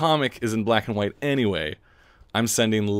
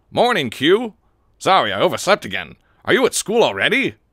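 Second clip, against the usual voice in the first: raised, high-pitched cool anime guy voice; 7 semitones higher, 5 dB louder than usual. Voicing the dude character's lines aloud for the kids: cool anime dude voice. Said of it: "my standard cool anime dude voice".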